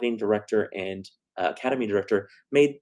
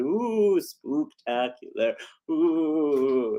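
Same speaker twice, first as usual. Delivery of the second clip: spooky, eerie ghost voice; 4 semitones higher than usual. Announcing a Halloween Spooktacular concert, the host does a ghost impression. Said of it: "that's my impression of a ghost".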